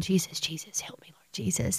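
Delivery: mock under-the-breath murmur. Retelling the words she hears him say under his breath, imitating muttering under the breath. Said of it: "I hear that little voice saying".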